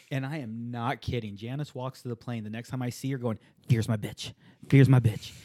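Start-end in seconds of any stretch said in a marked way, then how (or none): 3.7-5.3 put-on quiet muttering under the breath. Retelling how Janice walked to the plane: muttering under her breath. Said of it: "saying it under her breath very quietly".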